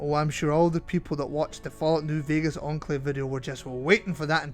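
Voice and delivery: ordinary talk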